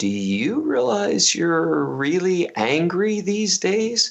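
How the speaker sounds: tender, careful rising voice. Retelling what his wife said to him one day, imitating soft speech. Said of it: "really softly to me".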